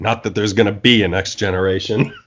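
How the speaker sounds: very low mutter under the breath. Retelling a film character's under-the-breath jab: imitating a muttered aside. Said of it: "Then under his breath".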